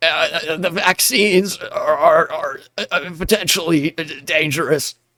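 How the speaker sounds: halting, sickly voice, sounding about to throw up. Mocking a politician who denies vaccines: RFK Jr. impression. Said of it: "pretty good R F K Junior impression".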